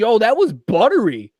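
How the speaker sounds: put-on Rhode Island accent. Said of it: "that same accent".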